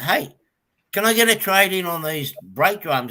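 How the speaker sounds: sarcastic smart-aleck tone. Retelling asking a parts seller for a trade-in: retelling own smart-aleck question. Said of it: "a smart aleck and go".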